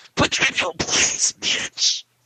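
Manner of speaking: supervillain voice, slightly distorted. Telling another speaker to shut up: sounding like Darkseid. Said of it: "made you sound like Darkseid".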